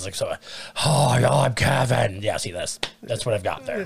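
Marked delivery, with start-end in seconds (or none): 0.9-2.2 very slow, dragged-out, creaky character voice. Trying out an impression after admitting being bad with impressions: Kevin impression. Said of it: "I'm so bad with impressions".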